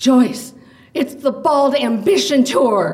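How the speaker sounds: high, loud, sudden blurted outburst. Leaving the lounge as a man in a headset passes, the narrator is blurting out. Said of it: "I blurted out".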